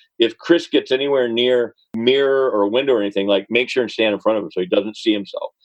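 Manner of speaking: ordinary talk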